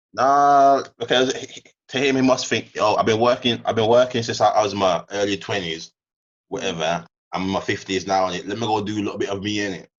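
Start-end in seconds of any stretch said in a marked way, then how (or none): none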